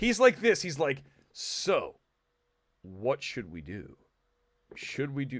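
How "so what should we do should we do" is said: stiff, slow put-on actor voice, lower and quieter. Showing how an actor delivers a scene: stiff, slow Ben Affleck impression. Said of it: "Everything's really slow 'cause he's so stiff".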